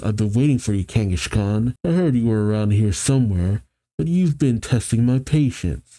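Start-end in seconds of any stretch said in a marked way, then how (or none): none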